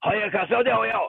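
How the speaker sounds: made-up fake Japanese babble. Retelling speaking to a friend in fake Japanese. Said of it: "did my fake Japanese".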